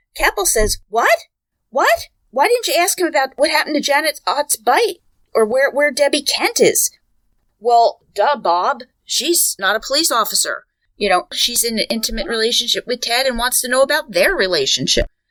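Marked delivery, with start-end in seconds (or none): 0.9-6.9 high, put-on outraged, up-in-arms outburst. Retelling how a detective reacted to the statement: imitating Keppel up in arms. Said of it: "Keppel was up in arms".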